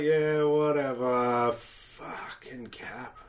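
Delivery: put-on, very slow, bored, uninterested drawl. Retelling a game trailer reply, bored Iron Man impression. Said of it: "It just sounds real bored".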